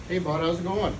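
low, fatherly put-on voice.

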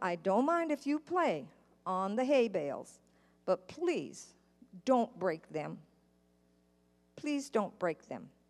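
put-on kind, gentle, patient voice. Retelling what a man in a truck told the kids, imitating a kind, patient voice. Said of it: "he said it with a kind voice and very patiently".

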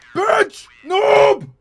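very high, loud screaming.

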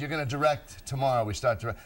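ordinary delivery

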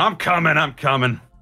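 loud, stretched-out calling out. Voicing a character who shouts over at a ringing phone: shouting. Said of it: "he just shouts over at the phone".

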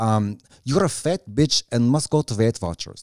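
put-on heavy, thick, comic Russian accent. Imitating how she would deliver a message aloud, heavy, funny accent. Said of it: "she would do like a heavy, heavy, funny accent".

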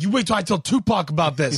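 angry, worked-up, really mad delivery. Retelling a scene from a show where a character gets mad: imitating someone getting real mad. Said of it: "whenever he gets real mad, he's like".

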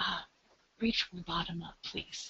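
very soft whisper. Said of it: "I just whisper to them".

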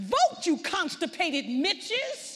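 acted, full-lunged, high, loud furious scream. Retelling screaming at Congress on the TV: retelling screaming at the top of lungs. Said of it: "screaming at the top of my lungs".

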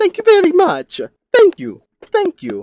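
shrill, loud, high, swooping cartoon voice. Speaker hanging out in a stream, doing a piss-poor Mario impression. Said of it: "That was a very piss-poor Mario impression".

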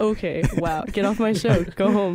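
ordinary talk

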